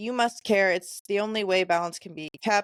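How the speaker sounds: ordinary talk, nothing marked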